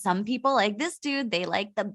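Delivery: plain reading voice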